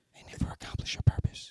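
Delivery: hushed, whispered aside. Finishing a point to the other speakers on the podcast: whispering. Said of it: "I had to whisper it like that".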